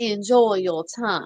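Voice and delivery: put-on Southern accent from Savannah. Retell the line you said while throwing a woman in a jail cell, in a Savannah Southern accent. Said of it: "I think you want a Savannah, a Savannah Southern".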